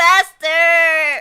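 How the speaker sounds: high-pitched, whiny call, acted out. Describing a character who calls out to his master: imitating a whiny character. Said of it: "he's very whiny".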